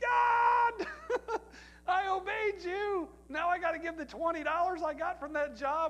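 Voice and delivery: high, laughing, half-shouted outcry.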